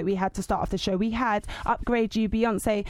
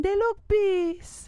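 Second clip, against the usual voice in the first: very high put-on old-lady accent; 10 semitones higher than usual. Retrying the accent for her grandmother's favourite phrase: put-on grandma accent. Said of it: "Or should I try it again?".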